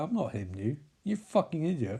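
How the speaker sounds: quiet, hushed, low and soft. Retelling a scene, speaking Alan's reply in Alan's voice. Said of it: "Alan is like".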